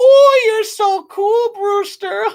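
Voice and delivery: very high, screechy, annoying voice. Reviewing a movie, speaker mimics the annoying character Evil Ed: screechy Evil Ed voice. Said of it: "really annoying, screechy, uh, high pitched, obnoxious voice".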